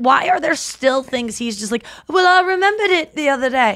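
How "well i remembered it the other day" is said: high-pitched, goofy comic sketch character voice. Mocking a Beatle who still recalls new stories: Dana Carvey impression. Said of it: "I'm doing the fucking Dana Carvey impression".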